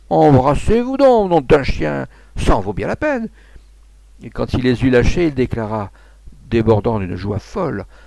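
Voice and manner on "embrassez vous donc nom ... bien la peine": high-pitched shouting, yelling. A man grabs two people by the neck and pushes them nose to nose, shouting. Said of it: "en criant".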